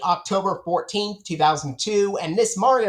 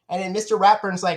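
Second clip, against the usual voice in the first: normal talking voice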